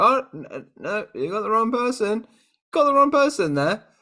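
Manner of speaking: high-pitched, flustered goon voice. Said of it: "they go".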